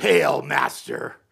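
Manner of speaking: rough, creaky, raspy possessed voice. Retelling a Bible scene where he kisses him, possibly filled with Satan: Satan-possessed voice. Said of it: "he was filled with possibly Satan himself".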